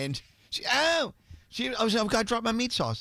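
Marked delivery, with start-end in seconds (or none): 2.0-3.0 teasing, unflattering mock imitation of another voice. Retelling a spill at the table, imitating Danielle. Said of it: "that's not what she sounds like".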